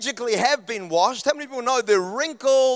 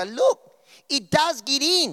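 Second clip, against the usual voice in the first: put-on horrible Australian accent, drawn out. Retelling a toothpaste advert with chalk: imitating a horrible Australian accent. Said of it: "that horrible Australian accents".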